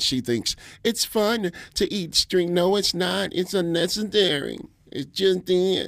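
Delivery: high, slow put-on voice. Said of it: "I don't know why I did that voice".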